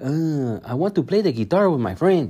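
light put-on Mexican accent. Criticizing how a film voiced a little boy, imitating Miguel's little Mexican accent. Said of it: "a little Mexican accent".

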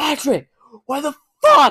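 high, loud yell, so hard the voice cracks. Retelling yelling at a friend in a store, retelling a yell, voice cracking. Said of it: "my voice was cracking like it just did now".

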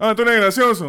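put-on yelling. Speaker recalls a math teacher who always talked shouting, imitating a shouting teacher. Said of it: "Hablaba gritando".

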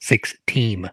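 slow "six team" with words clearly split apart.

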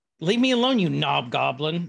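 put-on, really mad, angry voice. Retelling what Lily says when she gets really mad: imitating Lily being really mad. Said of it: "Lily calls people when she gets real mad".

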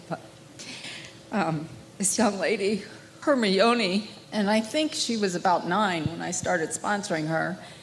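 voice choking up, near tears. Thanking the host, then recalling meeting the girl she sponsored, on the verge of tears. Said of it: "I'm going to cry".

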